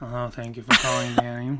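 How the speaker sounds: low telephone-answering voice. Demonstrating how they sound answering the phone: telephone voice. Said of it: "my telephone voice sounds like this".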